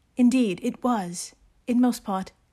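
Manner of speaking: mock reading-aloud voice. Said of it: "reading each entry to yourself in your best Jane Austen voice".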